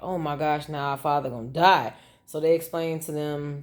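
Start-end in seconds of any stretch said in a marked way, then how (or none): none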